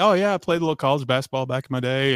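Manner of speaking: fast, completely dead-serious deadpan delivery. Retelling own answer to a man's question while others laughed, retelling own deadpan answer. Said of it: "I was deadpan".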